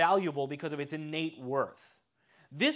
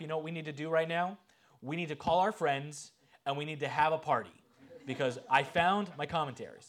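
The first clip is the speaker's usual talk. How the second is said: put-on dry, sarcastic, tongue-in-cheek tone. Retelling what he said to his wife: imitating his own sarcastic remark. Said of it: "I actually did say that sarcastically".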